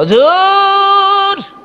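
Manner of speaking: put-on crying child voice, high, drawn-out sobbing.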